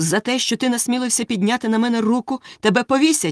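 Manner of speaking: indignant. The prince gets up from the ground and rushes at the guard, indignant. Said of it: "обурено кинувся на вартового".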